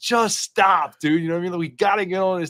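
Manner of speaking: loud screamed yelling. Retelling screaming to him while stuck out in the bay, retelling screaming at him. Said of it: "I'm like screaming to him".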